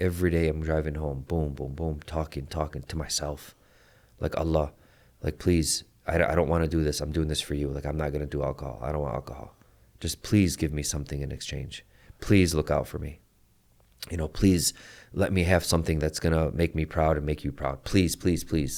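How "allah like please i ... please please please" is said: put-on pleading, begging voice. Retelling own prayers while driving to work: retelling own begging prayer. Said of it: "Like, begging him".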